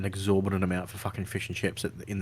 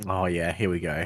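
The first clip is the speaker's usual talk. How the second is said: plain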